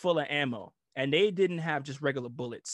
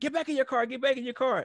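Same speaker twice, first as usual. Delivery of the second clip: mock, very high, screaming voice; 11 semitones higher than usual. Retelling an airman screaming on the radio: imitating someone screaming. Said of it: "the airman was screaming".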